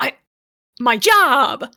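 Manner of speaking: proud exclamation. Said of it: "holds up his keys like".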